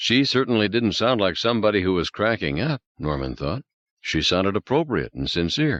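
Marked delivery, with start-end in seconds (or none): none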